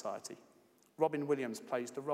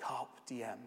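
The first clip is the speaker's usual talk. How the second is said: eerie, ghostly, otherworldly voice; 5 dB quieter than usual. Retelling how the boys lean in and Robin speaks: eerie voice as Robin. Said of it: "Robin says in an eerie voice".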